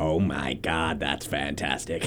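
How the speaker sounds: very deep, very low, very quiet, soft put-on voice. Trying to do the Nappa voice while talking about TFS, slip into a Cell voice. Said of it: "why did I just go into my cell voice?".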